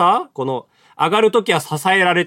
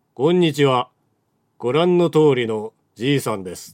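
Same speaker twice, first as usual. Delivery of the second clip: very slow, stretched out with long pauses; 4 semitones lower than usual. Recreating how Shiro Ito talks, slow Shiro Ito impression, long pauses. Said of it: "伊藤四郎ゆっくり喋るんですよ、すごい間を使って、でちょっと拙いですけど再現しますけど".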